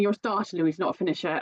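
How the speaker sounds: ordinary talk, nothing marked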